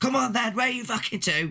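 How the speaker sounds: high-pitched, taunting shouting yell.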